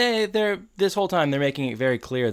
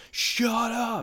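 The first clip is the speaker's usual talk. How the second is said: high-pitched yelling. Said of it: "some guy is screaming through the wall".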